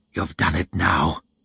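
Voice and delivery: hissing. As a soldier rides over toward them, Yulway speaks: hissed. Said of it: "hissed Yulway".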